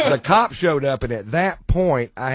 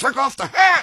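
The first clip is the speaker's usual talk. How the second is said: mock irritated, pissy snapping, very high pitch; 13 semitones higher, 4 dB louder than usual. Retelling what a guy snapped at him, mimicking a pissy guy. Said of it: "real pissy".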